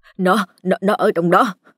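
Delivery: stammering, tongue-tied, stuttering. A man replying to a gang member, stammering. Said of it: "miệng lắp bắp".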